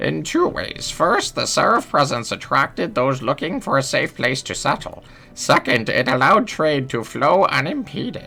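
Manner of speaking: put-on high elderly woman voice. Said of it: "we're gonna keep going with the old lady voice".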